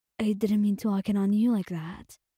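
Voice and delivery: plain reading voice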